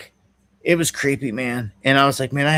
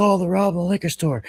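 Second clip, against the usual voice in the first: put-on yelling, alarmed, high and light; 5 semitones higher than usual. Retelling people seeing a liquor store robbed: imitating people yelling. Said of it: "there were people yelling".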